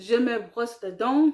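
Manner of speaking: ordinary talk, nothing marked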